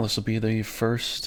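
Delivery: ordinary delivery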